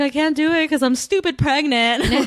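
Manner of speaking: high, bawling, sobbing cry. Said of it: "she starts bawling".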